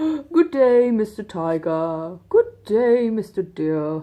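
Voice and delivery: loud, very slow, upper-class posh drawl. Acting out the animals' typical greetings in a story, in a posh voice. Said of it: "like your typical kind of posh".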